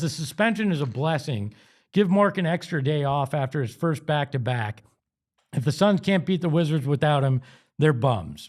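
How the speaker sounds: ordinary talk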